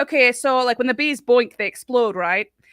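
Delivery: put-on northern UK accent. Retelling what a bee teacher from northern UK said: imitating a northern UK accent. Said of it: "he sounded like he was from Game of Thrones".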